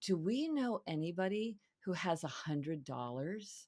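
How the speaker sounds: slow, secretive, hushed tone. Recalling asking their mother something while leaving the grocery store, hushed tone. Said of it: "in this hushed tone".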